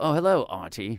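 loud fake English accent. Retelling how musicians from England answer an introduction: imitating an English musician. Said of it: "especially from, uh, England".

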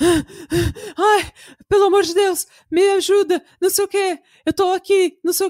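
breathless, high, panting, desperate panicked yelling. Retelling a man's call while she tries to reach rescue, imitating panting, shouting. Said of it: "E ele ofegante, gritando, tipo".

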